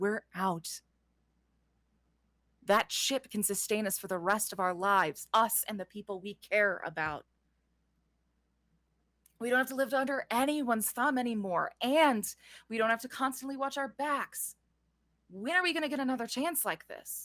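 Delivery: confidential, confiding tone, as if not to be overheard. Cecilio talks to the group about the reward, in a lowered voice. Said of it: "lowers his voice as he's uh like speaking about this".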